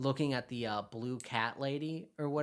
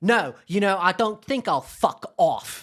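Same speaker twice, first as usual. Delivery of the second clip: very loud, angry, slow, put-on British accent; 5 semitones higher, 13 dB louder than usual. Retelling a film scene where an angry character turns British: imitating a British accent. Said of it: "British as heart".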